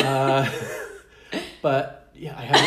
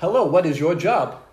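loud, put-on foreign accent with broken English; 4 semitones higher, 5 dB louder than usual. Imitating a bot's opening Snapchat messages, put-on accent, bad English. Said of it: "I love how you're putting the accent on this".

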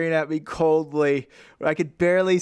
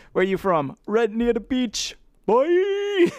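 sing-song, movie-style put-on Jamaican accent; 7 semitones higher than usual. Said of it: "My knowledge of the accent is strictly from Half Baked".

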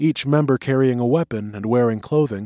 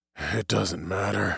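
hoarse, raspy, much quieter; 3 semitones lower, 8 dB quieter than usual. A bedridden man refuses the food placed beside him, speaking hoarse. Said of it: "said Bailey hoarsely".

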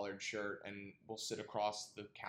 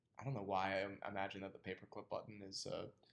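plain

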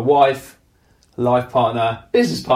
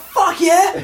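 mock excited voice, higher pitch; 4 dB louder than usual. Retelling his wife's reply to the podcast invite: imitating Lauren being excited. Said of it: "You were well, well excited".

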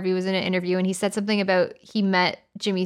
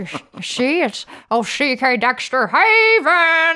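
put-on very slow, raised transatlantic accent, "Haven" stretched out; 7 semitones higher, 6 dB louder than usual. Showing how a Jimmy Stewart accent sounds: Jimmy Stewart accent. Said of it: "I always like doing the Jimmy Stewart accent".

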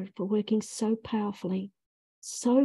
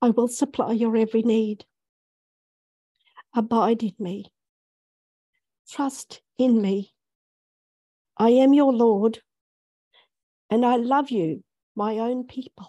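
slow, raised, emotional voice full of feeling; 7 dB louder than usual. After praying, the speaker relays words spoken by the lord, getting emotional. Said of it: "Sorry, I'm getting quite emotional".

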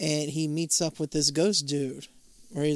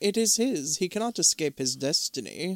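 ordinary talk

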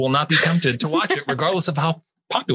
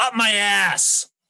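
shouting in anger, pitched up; 6 semitones higher than usual. Retelling the listener's reply to a random man, retelling a yell. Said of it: "And you yelled at him".

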